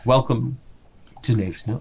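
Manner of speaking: every word purred in a low rumble. Game master voicing the Displacer Beast greeting the players, in a purring Displacer Beast voice. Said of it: "that voice kind of purr out, rumble out through the darkness".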